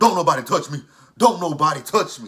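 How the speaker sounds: high, very loud, frantic screaming. Retelling an argument, quoting a man who keeps yelling, imitating Michael screaming. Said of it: "Michael keeps screaming".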